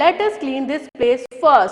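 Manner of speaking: plain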